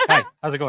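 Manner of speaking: put-on, overly formal, stiff, nervous, awkward voice. Retelling the other speaker's greeting at a meet-and-greet: imitating awkward business-meeting greeting. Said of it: "you immediately go full business meeting".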